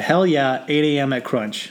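ordinary talk

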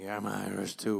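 heavy, thick, put-on American accent. Retelling what a hammered man kept yelling at the speaker, in a thick American accent. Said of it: "with a big thick American accent".

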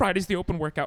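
excited, eager, high, loud chatter.

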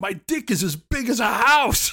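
very high, shrill, stretched-out holler. Telling a joke, acting out what the man yells at one point: retelling a yell. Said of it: "he yells".

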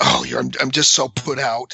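acted huffy, put-upon tone. Describing helping put the kids to bed begrudgingly, acting out a huff. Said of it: "I do it in a huff and like".

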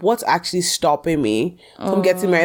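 ordinary talk

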